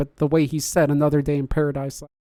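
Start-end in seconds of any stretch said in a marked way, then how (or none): none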